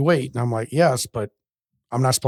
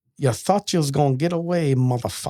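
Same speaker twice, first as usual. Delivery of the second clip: imitated Jamaican voice. Quoting a man from Jamaica who always swore, in a Jamaican accent. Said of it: "I'm trying to do like a Jamaican voice".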